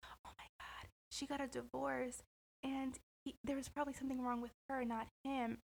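very hushed, gossiping half-whisper. Imitating aunties gossiping about a divorced woman: imitating aunties half-whispering.

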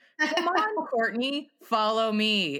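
ordinary talk, nothing marked

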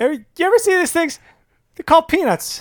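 very high stand-up comic voice. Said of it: "That's my Seinfeld impression".

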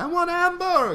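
put-on Italian accent. Retelling what an older relative said she wanted to eat, in a put-on Italian accent. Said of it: "and with the Italian accent".

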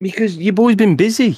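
loud high yelling. Asked on a podcast why a game isn't finished, answering by yelling. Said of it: "Why are you yelling at me?".

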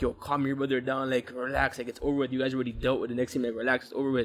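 ordinary talk

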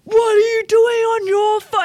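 loud, high-pitched screaming. Retelling how the host got on the table, screaming at a guy on his phone. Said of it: "And like screams at this guy".

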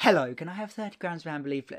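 put-on extra polite tone. Retelling asking a shop worker for cigarettes: imitating being really nice. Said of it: "I was being really nice".

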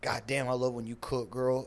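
tiny, meek, very quiet, low mousy voice. Retelling a man talking over the phone, in a mousy voice. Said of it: "like mousy over the phone".

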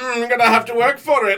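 put-on elderly old man voice. Acting out an old laundromat attendant asking for something in return: put-on old laundromat attendant voice. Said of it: "I don't know why I made him sound like that".

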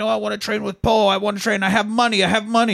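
very high, shrill yelling scream. Recapping a film scene where Kurt screams at a shut door, imitating Kurt screaming. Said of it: "Kurt's screaming at this door".

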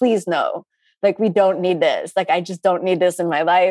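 mock pleading, acted-out begging tone. Acting out how the speaker begged him every time he raised it, retelling begging. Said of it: "And I begged him".

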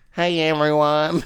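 put-on voice with a slight southern twang. Imitating how the host said the intro: slight southern twang. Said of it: "It had a little southern twang".

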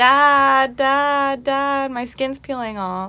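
slow, acted-out, high, drawn-out hollering scream. Retelling screaming out the window to dad, imitating own screaming. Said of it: "I screamed out the window".

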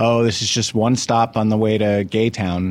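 ordinary talk

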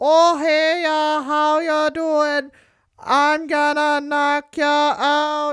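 put-on Minnesota accent, very high pitched and drawn out. Imitating how a wrestler sounds when he talks: Dan Severn as a Fargo character. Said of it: "Dan Severn sounds like one of the characters from Fargo".

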